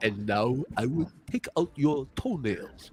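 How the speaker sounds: low, sinister, menacing villain voice. Imitating how someone would talk to a person in a chair: imitating a torture-chamber villain voice. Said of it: "He sounds like somebody who will walk into a room".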